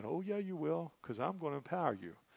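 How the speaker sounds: gentle, soft delivery. Retelling how the one on the throne answers someone crying out: retelling gentle words. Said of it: "gently saying".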